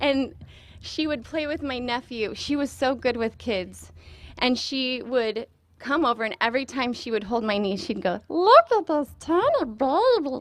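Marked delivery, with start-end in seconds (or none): 8.3-10.4 put-on high, swooping, drawn-out voice. Remembering a friend who held her knee, imitating a friend's special voice. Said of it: "heard her do the voice".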